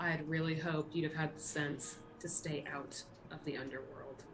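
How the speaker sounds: soft, quiet mutter under the breath. A player passing Hector as the group walks off, muttered under breath. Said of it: "Under my breath".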